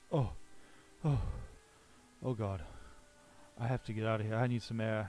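queasy voice, about to vomit. Game master voices a character who has been hauling bodies, about to throw up. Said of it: "like he's about to throw up".

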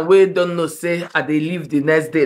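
ordinary talk

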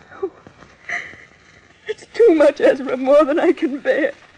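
weeping through every word. A woman told her companion must go to america alone, crying. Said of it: "Don't cry, [name]".

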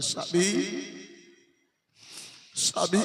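very soft, hushed, tearful voice.

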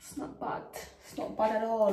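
bad put-on English accent, whispered and breathy. Commenting on a new hairstyle before going out: bad english accent. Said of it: "That was my English accent".

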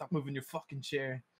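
high-pitched mild yell. Retelling how a player turned around during the game: imitating someone screaming. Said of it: "started screaming".

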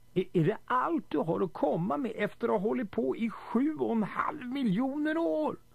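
screaming. Narrator reads a man screaming at the computer; screaming. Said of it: "skrek Lundqvist".

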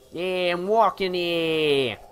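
loud, drawn-out New York Bronx accent. Imagining everyone in the game's future talking this way, new york bronx accent. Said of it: "if everyone talked like that".

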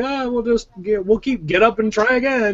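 put-on cheerful, upbeat tone. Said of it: "I'm still playing the game all happy".

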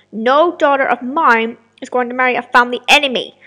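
loud yelling. James answers his daughter Elena, shouting at her. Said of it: "you have been arranged to marry [name], who is a knight. He is 34 years of age. He is said to be a good husband, but his last wife died in the past 4 years, reasons unknown," announced King / "No, [na".

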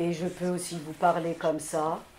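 very low, deep register. Showing how varied the speaking voice can be, a much deeper voice. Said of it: "de manière beaucoup plus grave".

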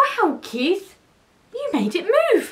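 very high, amazed gasp of wonder. Narrator reads the cats speaking to keith, gasping. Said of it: "they gasped".

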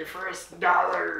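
loud, high cartoon voice, belted out. Asked to hold up a dollar from the bank and say it, in Mr. Krabs voice. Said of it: "I can't do the voice though".

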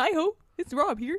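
booming, very loud, high frog-puppet voice. Told he sounds like Kermit, showing the resemblance, Kermit the Frog voice. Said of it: "normally you sound like Kermit".

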